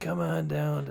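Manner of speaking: imitated quiet whisper. Imitating a man from a local furniture commercial: imitating a whisper.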